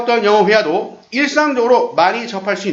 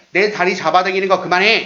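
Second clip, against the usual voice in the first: normal talking voice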